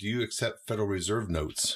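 mock deadpan delivery. Retelling what one person asked, imitating a deadpan question. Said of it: "in a very deadpan way".

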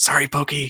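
high, hushed, voiced stage whisper. Narrating a character who nearly gets stuck with his backpack, half-whispering. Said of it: "And you hear him whisper".

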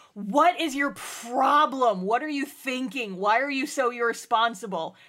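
acted-out scream. Retelling how a woman laid into someone: retelling a scream. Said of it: "screams at her".

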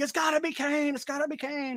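very high, gravelly, fire-and-brimstone growl. Retelling own reaction during the show intro: fire and brimstone gravelly voice.

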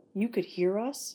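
distrustful, suspicious, wary. A woman questions a man who overheard her conversation: suspicious. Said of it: "Ellen asked suspiciously".

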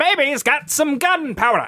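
vintage newsreel narration. Recalling a favorite line, one friend shows how to say it: old newsreel announcer voice. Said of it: "It sounds better as like if it was an old like newsreel".

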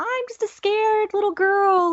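very high fake crying and sobbing, poured on thick. Recapping a scene where a character lies to the others, imitating Sansa's fake crying. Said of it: "she cries and she just pours it on super thick".

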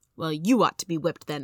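ordinary delivery

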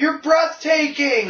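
very high, loud called-out yell. Retelling how someone in the crowd yelled at a presenter, imitating a yell. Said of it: "someone just yells out from the crowd".

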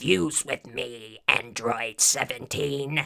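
low, villain-style cartoon voice. Doing voices for a listener, a Cell impression. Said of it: "You were talking like me".

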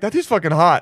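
normal talking voice

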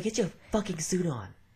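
put-on, high-pitched, bossy yelling and screaming. Imagining bossing people around on the listener's wedding day, mock yelling. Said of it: "I'm going to be the one yelling and screaming".

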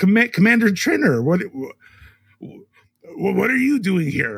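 voice cracking. A commander answers a visitor who walked in calling for him, voice cracking. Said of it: "His voice cracked".

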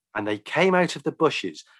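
plain reading voice

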